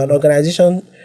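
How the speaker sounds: ordinary talk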